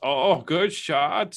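clumsy fake Caribbean accent. Telling a golf story, the speaker quotes the other player in a put-on Caribbean accent. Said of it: "What kind of accent?".

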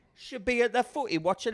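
terrible fake Liverpool accent, very high and loud. Mimicking an unknown woman, in a bad liverpool accent. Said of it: "I can't do a Liverpool".

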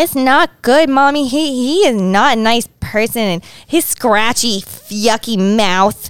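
put-on cute, babyish little toddler voice. Voicing what she says to mommy about a man, cute little baby voice. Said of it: "Like a cute little baby voice".

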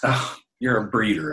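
snide, catty, bitchy put-down tone.

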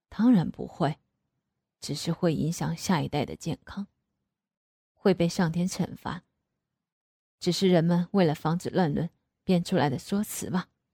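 ordinary talk, nothing marked

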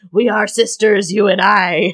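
growling monster bird voice. Describing a harpy attacking the last unicorn, quoting it: growling harpy voice.

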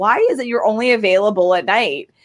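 ordinary talk

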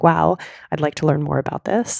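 plain

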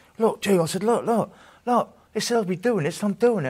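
high, loud, excited, amazed outburst full of wonder.

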